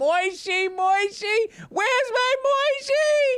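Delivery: mock very high, frantic, drawn-out panicked scream. Telling a joke, a woman whose toddler was swept out by a wave: screaming in panic. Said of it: "She's screaming his name".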